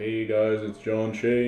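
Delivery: mock dull, flat, unexcited, bored monotone. Imitating how he used to open his videos, bored monotone. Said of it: "I used to be really monotone and I sounded really boring".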